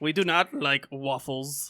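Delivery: slow, vague put-on Belgian accent, drifting German. Voicing a Belgian person who hates waffles: put-on accent, meant as Belgian. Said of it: "I'm not sure what accent that was".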